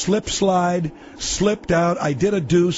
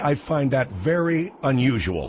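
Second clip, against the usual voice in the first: ordinary talk, nothing marked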